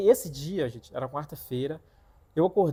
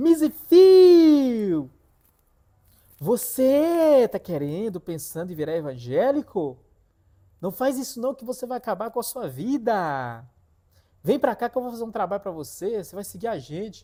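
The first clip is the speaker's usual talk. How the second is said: put-on loud, high demon cry, distant-sounding, drawn out; 6 semitones higher, 6 dB louder than usual. Retelling how the demon in the woman called out to him: retelling a demon's shout. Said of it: "deu um grito de lá".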